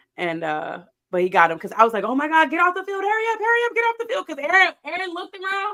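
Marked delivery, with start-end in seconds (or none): 2.0-4.0 put-on shout, higher and louder.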